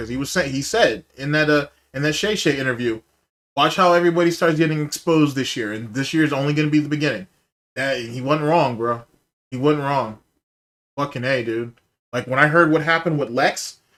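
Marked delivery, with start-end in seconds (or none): none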